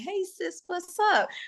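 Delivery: casual homegirl voice. Speaker explains how she sometimes drops her news voice in conversation: casual homegirl voice. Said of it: "like the homegirl you see from down the street".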